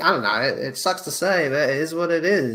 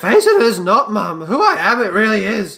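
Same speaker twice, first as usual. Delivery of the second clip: put-on croaky, shrill, very loud boy voice; 7 semitones higher, 8 dB louder than usual. Speaker takes up doing a Yoda boy voice; croaky Yoda boy voice. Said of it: "Do a Yoda boy voice with a croaky voice".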